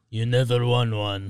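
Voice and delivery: put-on voice that sounds Russian. Quoting Shaq ending an argument with Chuck: failed Shaq impression. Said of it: "That was, like, Russian".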